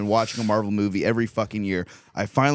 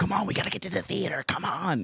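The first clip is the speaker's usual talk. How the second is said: mock pushy, nasty, pitched-up hurrying; 8 semitones higher, 5 dB quieter than usual. Retelling rushing everyone to the theater: imitating own nasty rushing. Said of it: "I was being nasty".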